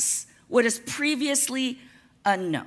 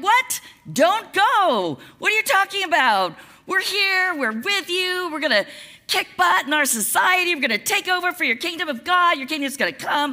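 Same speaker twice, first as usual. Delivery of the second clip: high, rushed, panicked voice. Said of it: "his disciples are freaking out".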